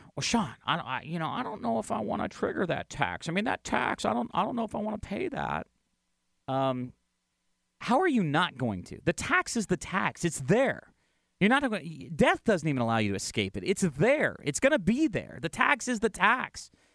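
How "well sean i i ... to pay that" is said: halting, unsure, worried, hesitant, creaky put-on voice. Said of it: "some of these voices".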